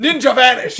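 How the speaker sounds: very loud, shrill, high-pitched scream. Joking about leaving a room: screaming a catchphrase. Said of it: "I just scream".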